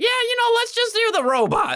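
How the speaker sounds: very high, goofy character voice.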